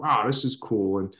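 ordinary talk, nothing marked

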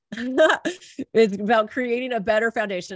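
speech breaking into laughter. Describing the start of the year as healing, laughing while talking. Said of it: "sorry, I'm laughing because".

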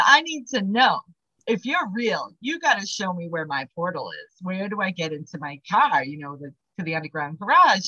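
ordinary delivery

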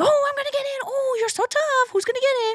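very high, crazy, playful, silly goofball voice. Instructor showing how to sound when playing with a dog for a toy: silly, crazy play voice. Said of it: "your sound should get silly and crazy".

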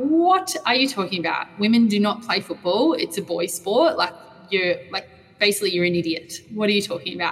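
plain

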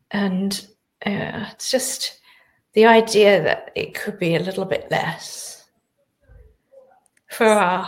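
teary, near tears. Mid-conversation, the speaker is about to cry. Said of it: "I'm going to cry".

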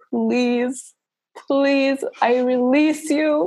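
mock tearful pleading, high-pitched and very slow. Retelling own words during a long birth: retelling a crying plea. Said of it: "that's the point where I actually cried".

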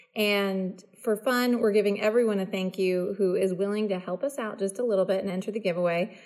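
plain

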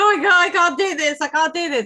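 high, loud, panicked sobbing with hyperventilating gasps. Retelling breaking down in front of a lady, the speaker acts out tearful hyperventilating. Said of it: "I'm in floods of tears, hyperventilating".

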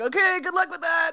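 high, sarcastic, dismissive, tossed-off delivery.

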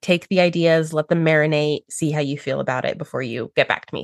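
ordinary talk, nothing marked

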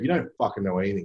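ordinary delivery

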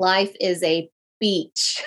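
slow, low, deliberate, each word placed. A speaker repeats a phrase for the audience, a little more slowly. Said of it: "say that a little more slowly".

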